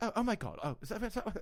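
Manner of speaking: light, poppy, high voice. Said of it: "just kind of like very like poppy".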